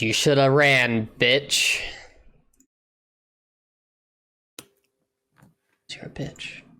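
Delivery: rough, harsher, gruff goblin monster voice. Narrating a game scene, voicing a goblin in a gruffer goblin voice. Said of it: "a little bitty gruffer of a goblin says".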